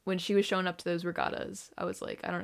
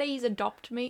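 put-on British accent, pitched high; 5 semitones higher than usual. Joking about being taken in by the sisters: put-on British accent. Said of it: "I'm not supposed to do a British accent".

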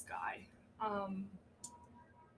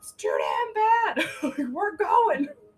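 put-on high, loud old-man shout. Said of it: "like, grandpa meme where it's like".

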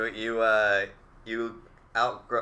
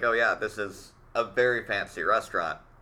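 ordinary delivery

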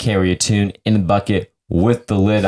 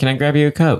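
put-on slipped-in British accent; 7 semitones higher than usual. Acting out what they say at a Texas Waffle House, accidental British accent. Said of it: "that was a British accent".

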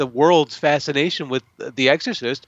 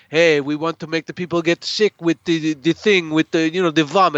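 rough, homemade, put-on Greek accent; 2 semitones higher than usual. Quoting Asinida describing a film scene, in Asinida's Greek-accented voice. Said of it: "this is my best Greek accent that I got".

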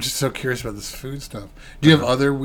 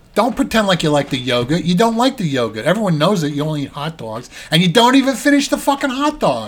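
loud, swooping, scolding mother voice; 5 semitones higher, 5 dB louder than usual. Joining in after another speaker's impression, imitating a mother. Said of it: "That's a really good impression".

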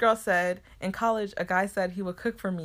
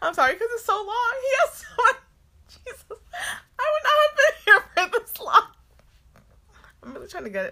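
talking through laughter, higher and louder; 7 dB louder than usual. Reading a long post aloud and apologizing, laughing while talking. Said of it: "I'm trying to stop laughing".

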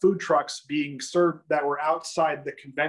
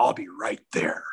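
very low, deep, manly heroic voice; 8 semitones lower than usual. Retelling what he says when his kid is sick, use a deep, heroic, masculine voice. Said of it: "goes into this like very deep, heroic, masculine voice".

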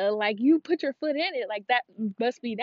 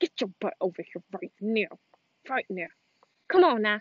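talking through clenched teeth, pitched lower; 2 semitones lower than usual. Imagining calling their kids over, talking through clenched teeth. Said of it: "clench my teeth and then talk through my teeth".

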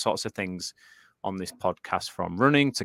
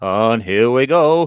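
put-on 1990s radio DJ patter; 2 semitones higher, 7 dB louder than usual. Speaker describes new lighting equipment, trying out a 90s DJ voice. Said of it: "I was trying to do a 90s DJ".

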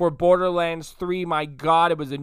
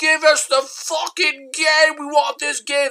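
fake Italian accent, higher; 9 semitones higher, 4 dB louder than usual. Imitating fans banging on doors demanding the game: put-on Italian accent. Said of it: "Italian accent probably".

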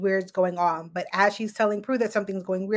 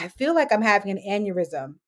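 usual speaking voice

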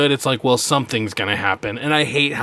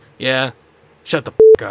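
loud, super gravelly, grinding growl; 6 dB louder than usual. Imitating an actor's line in his gravelly voice: imitating Sam Elliott's gravelly voice. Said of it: "super grovelly voice".

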